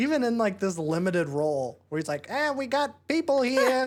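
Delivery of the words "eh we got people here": put-on doofy Midwest accent, higher pitched. Retelling a small movie role by David Lynch: David Lynch voice. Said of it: "this doofy little Midwest accent".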